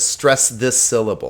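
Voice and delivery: ordinary talk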